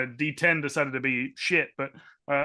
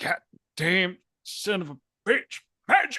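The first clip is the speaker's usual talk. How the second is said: grumbling, a touch higher in pitch; 5 semitones higher than usual. A player voices his character after the assessor teleports away, muttering under his breath. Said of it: "He just mutters under his breath".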